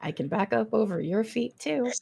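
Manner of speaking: muttering under breath. Playing a character answering teasing friends: muttering under her breath. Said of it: "under her breath".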